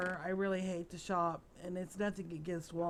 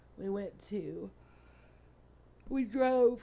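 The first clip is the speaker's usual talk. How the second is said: loud words spoken through a yawn; 2 semitones higher, 5 dB louder than usual. Recording while really tired, telling about the day's drive: yawning while talking. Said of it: "excuse me, I'm yawning".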